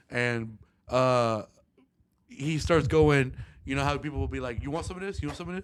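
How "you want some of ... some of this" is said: mock taunting, quick, high, rattled-off jeering. Retelling how another man taunted someone during a confrontation, mock-taunting. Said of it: "he's definitely like taunting".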